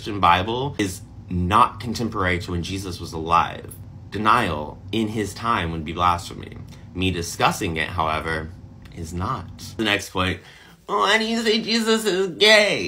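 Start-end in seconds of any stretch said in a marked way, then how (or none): 10.9-12.9 put-on very high, whining, complaining tone. Voicing a commenter's question from the comments: mock-whiny voice. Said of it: "I added that whiny voice".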